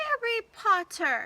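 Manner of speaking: loud, high, squeaky elf voice. Narrator reading the creature greeting Harry Potter, high-pitched Dobby voice. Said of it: "said the creature in its high-pitched voice".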